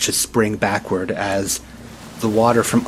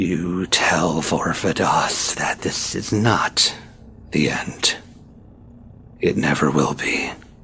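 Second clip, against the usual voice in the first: slow voice echoing and reverberating off rock walls; 4 semitones lower than usual. A narrator voices a being speaking aloud in a cave, voice echoing from cave walls. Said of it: "My name is [name]. / And you hear this voice echo through the cave, though it seems to come from the rocks of the cave wall itself".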